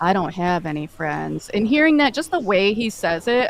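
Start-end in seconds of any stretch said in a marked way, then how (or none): 0.0-1.5 low-key, very quiet, soft-spoken delivery. A stranger answers when asked where he came from, said real quiet. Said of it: "just says real quiet".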